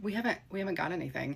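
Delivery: soft, halting, sheepish voice. Retelling the husband admitting they got nothing: imitating a sheepish reply. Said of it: "sheepishly, sheepishly said".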